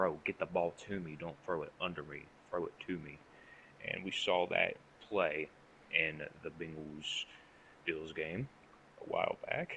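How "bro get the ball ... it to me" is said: ordinary talk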